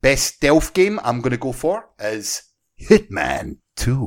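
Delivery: sing-song Scottish accent, laid on for a laugh. Naming a pick for best stealth game of the year, Scottish accent. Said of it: "The Scottish voice".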